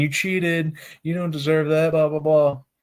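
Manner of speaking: put-on heckling, taunting yell in a kid's voice. Retelling how a kid at the guardrail yelled: imitating a kid yelling. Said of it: "just saying".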